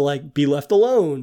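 ordinary talk

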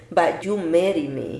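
ordinary delivery

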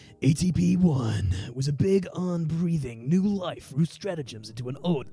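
dramatic cinematic movie trailer narration voice. Reading out a long question, in a movie voice. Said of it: "do it in a movie voice".

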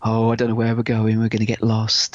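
put-on spooky teasing voice. Retelling scaring a daughter in the woods: retelling scaring a child. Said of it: "I'm scaring her, saying".

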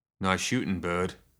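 plain reading voice

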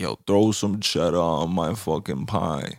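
put-on baked, spaced-out stoner voice. Joking with a co-host about a food combo's inventor, imitating a stoned guy. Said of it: "some high ass motherfucker was like".

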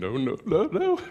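talking through laughter, slow and swooping. Describing telling a grandson no, laughing while talking. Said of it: "I knew I was gonna start laughing".

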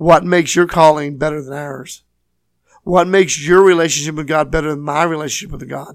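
acted, snide, scornful, really sarcastic, judgmental tone. Acting out the believers who challenge the bride: imitating a really sarcastic tone. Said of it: "that really sarcastic".

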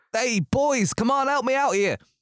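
very high-pitched, loud shouted yell. Voicing a man pinned to the ground, calling his boys: shouting for help. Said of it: "this man shouts".

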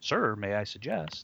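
nerdy android voice. Speaker imitates how another voices the character Torg: Data impression. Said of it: "He totally sounds like Data".

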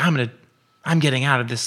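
frightened, scared voice. Retelling a client scared in a cenote who wants out; imitating a scared client. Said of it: "she was kind of scared being in the cenote".

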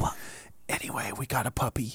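quiet high whisper. Talking quietly so the sleeping puppy doesn't wake up: whispering. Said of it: "we'll whisper so we don't wake up".

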